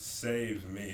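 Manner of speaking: ordinary talk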